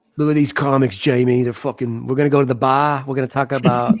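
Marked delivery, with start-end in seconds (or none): 2.1-3.9 loud put-on Boston accent with dropped r. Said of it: "the only way I can imitate Boston".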